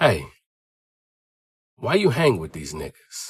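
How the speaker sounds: confidential, hushed stage whisper, close in. Retelling what a family friend leaned in and said: imitating a half-whisper. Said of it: "he kinda leaned in and he whispered to me".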